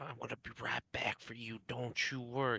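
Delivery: whispered reassuring tone. Playing a character, telling her he will be right back: whispering in character. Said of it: "I'm gonna whisper to the".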